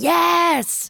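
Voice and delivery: put-on, very loud, very high, drawn-out ghostly rasp. Retelling a ghost's answer heard outside the apartment: imitating a loud ghost voice. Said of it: "Like that, very loud".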